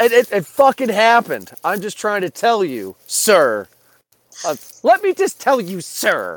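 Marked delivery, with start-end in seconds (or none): 1.6-6.4 showy, earnest, animated insistence with big pitch swoops. Making a joke during an argument about wrestling: Paul Heyman impression. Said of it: "that's my Paul Heyman impression".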